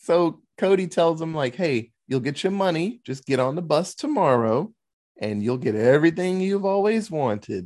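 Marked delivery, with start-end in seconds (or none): 1.6-7.7 dark, sinister, ominous and foreboding tone. Retelling a character's promise from a movie: imitating an ominous tone. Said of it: "all ominously".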